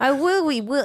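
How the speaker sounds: put-on high, childish small-boy voice. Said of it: "And then act like a little boy".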